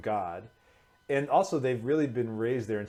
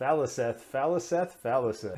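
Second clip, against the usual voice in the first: plain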